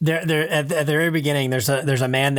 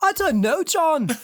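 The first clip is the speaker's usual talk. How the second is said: very high-pitched, argumentative pushback. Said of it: "My entry for [name] is always to argue with [name]".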